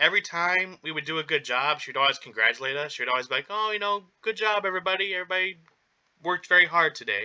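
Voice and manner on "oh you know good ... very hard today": put-on gentle, sweet, high old grandma voice. Retelling how the manager praised the staff: imitating a sweet old grandma. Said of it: "like a sweet old grandma".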